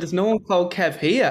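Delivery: speech with a laugh breaking through, half-laughing. Retelling answering people who demand kev be sent out, retelling half-laughing reply. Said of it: "And I'm half laughing like you are".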